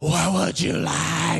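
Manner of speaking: slow, drawn-out stage whisper. Retelling how theater servers ask for orders during the movie: imitating a stage whisper. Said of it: "a stage whisper where they're like".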